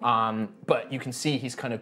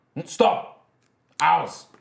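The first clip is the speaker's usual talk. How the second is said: gruff, rough, raised hostile voice; 5 semitones higher, 5 dB louder than usual. Voicing an archer who stops a healer mid-spell: voicing a hostile archer. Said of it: "one of them is just like".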